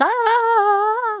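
high, put-on mock scream.

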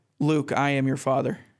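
ordinary delivery

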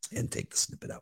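soft, unvoiced whisper, barely any voice. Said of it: "the night that I can't talk".

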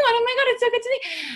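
very high, overly bright, gushing voice. Retelling bumping into someone randomly: imitating own super high voice. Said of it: "you notice that your voice goes super high".

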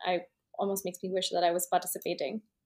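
normal talking voice

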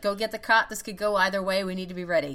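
ordinary talk, nothing marked

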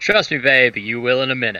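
as sleazy a delivery as possible. Replying to Cat, who asks to take a break, in a sleazy tone. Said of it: "As sleazy as I can get that out".

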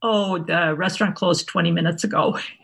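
ordinary delivery

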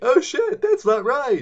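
put-on shouting voice.

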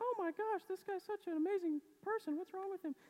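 put-on girl voice, very high and girly. Acting out a hotel clerk's reaction to the speaker, in a girl voice. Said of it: "That's my girl voice".

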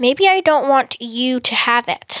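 growled, growling voice. The queen answers Glory, who offered to take the throne, with a growl. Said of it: "said the queen with a growl".

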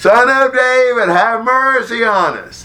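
loud, very high, monotone holler. Retelling a story of men calling out to Jesus, acting out a holler.

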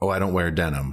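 ordinary delivery

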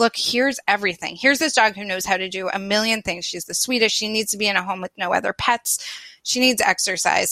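normal talking voice

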